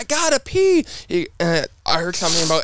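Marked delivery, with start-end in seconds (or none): 0.0-0.8 reenacted scream, much higher. Retelling shouting to the crew chief through bad earbuds, retelling a scream. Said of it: "So I'm screaming to my crew chief".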